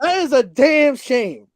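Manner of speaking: worked-up, passionate yelling. Venting about his team's season, yelling. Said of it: "I'm sorry for yelling".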